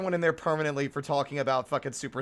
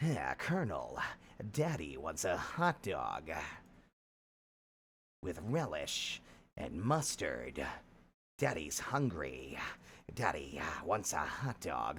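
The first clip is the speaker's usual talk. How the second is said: breathy put-on gruff voice, lower and quieter; 10 semitones lower, 9 dB quieter than usual. Joking in a game, drifting into a new character: breathy Solid Snake voice. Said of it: "The breathiness at the end of the words".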